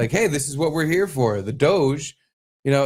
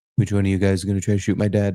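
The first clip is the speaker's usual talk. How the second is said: flat, deep, dead-level monotone; 6 semitones lower than usual. Joking about Barron looking around at a crowd: Barron voice, flat and deep. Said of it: "He kinda has his dad voice, but it's a little flatter and deeper".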